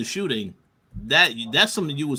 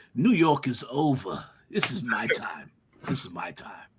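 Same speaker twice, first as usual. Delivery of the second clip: put-on aged, lordly British accent, old lord voice; 4 semitones lower, 4 dB quieter than usual. Recapping a TV episode, quoting a character's line in an old British lord voice. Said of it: "Why did you sound like an old British lord".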